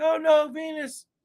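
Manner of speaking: frightened, drawn-out high cry.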